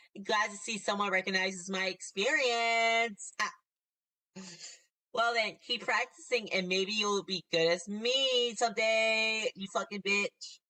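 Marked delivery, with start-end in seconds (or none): 0.2-9.5 put-on California Valley Girl accent. Reading a mean character's lines aloud in a valley girl voice. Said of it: "that Valley Girl voice".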